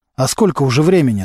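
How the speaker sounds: plain reading voice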